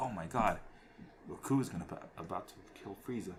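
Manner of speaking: ordinary talk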